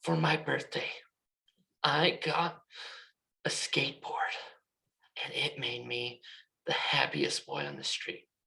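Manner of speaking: gloomy, downcast, sad, low-pitched and quiet. Teaching tone: a happy sentence spoken in a sad, slow, low tone. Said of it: "what made that sound sad was my tone. I was slow, I was low in pitch".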